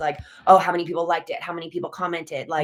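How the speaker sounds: normal talking voice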